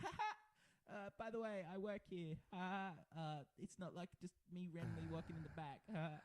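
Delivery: put-on giddy chatter. Retelling how the other speaker first introduced himself: imitating someone giddy. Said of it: "in your, like, giddy self was like".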